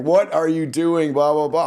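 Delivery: loud, put-on screaming. Retelling how the emergency room doctor reacted to a repeat visit: imitating a doctor screaming. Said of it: "who proceeds to scream at me".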